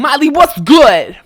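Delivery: put-on confrontational voice. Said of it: "you're just gonna be like".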